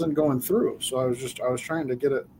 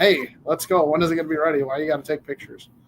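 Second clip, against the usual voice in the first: yelling, hollering across at full volume; 2 semitones higher, 3 dB louder than usual. A husband retells his wife hurrying him while he films his cooking, imitating wife yelling. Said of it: "I got the wife yelling at me".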